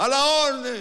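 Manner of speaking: loud hollered, called-out shout. Retelling what someone called out from the little house, retelling a shout. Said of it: "alguien salió y gritó".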